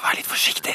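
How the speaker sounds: weak, hushed, secretive whisper. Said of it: "Og med svak stemme".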